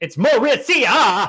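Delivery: heavy, even stress on every syllable of Mauricia. Recalling being unsure where a name's stress falls: every syllable of Mauricia stressed. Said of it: "I was just emphasizing all the syllables".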